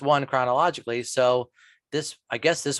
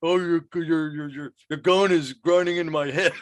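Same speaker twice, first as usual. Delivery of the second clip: garbled talk, chewing through words, mouthful of gum; 4 semitones higher than usual. Retelling a scene where a man shoves gum in his mouth, imitating talking with mouthful of gum. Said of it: "with a mouthful of gum going".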